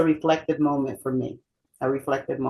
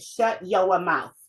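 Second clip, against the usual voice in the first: put-on slow, drawn-out New England accent. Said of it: "That New England accent was always there".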